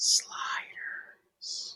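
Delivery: hushed, breathy whisper. Podcast guest, asked by the host for his best Sliders whisper, giving a Sliders whisper. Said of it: "can you give me your best Sliders whisper?".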